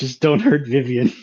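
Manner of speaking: low, mumbled, indistinct voice. Voicing the character Tika during the group's scene: mumbled. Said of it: "Tika mumbles".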